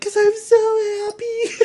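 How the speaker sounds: tearful joyful crying, very high, slow and drawn-out. Retelling a video of a woman asked why she is crying, imitating crying from happiness. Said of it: ""Why are you crying?"".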